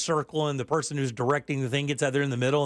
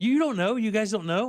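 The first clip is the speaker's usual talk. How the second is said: mock giggling laugh, much higher pitched; 7 semitones higher than usual. Retelling what he finally answered when asked what was wrong, imitating his giggling laugh. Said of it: "he giggle laughs like he's got himself tickled".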